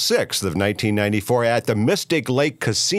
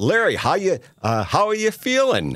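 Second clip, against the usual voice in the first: yelling, much higher; 8 semitones higher than usual. Speaker recalls yelling a question to Larry from ringside: retelling a yell. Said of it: "I yelled out".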